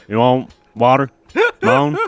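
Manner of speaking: loud, swooping, boorish voice. Mocking someone's moaned answer when offered water, imitating a racist uncle. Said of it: "my fucking racist uncle".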